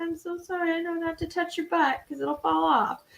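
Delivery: high, soft, apologetic tone. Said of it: "I was apologizing to him".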